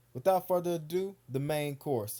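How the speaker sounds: ordinary delivery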